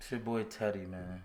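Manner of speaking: flat, lifeless, zero-energy, unenthusiastic and soft. Saying a channel intro alongside a partner, unenthusiastic. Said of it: "Why are you saying it so unenthusiastically?".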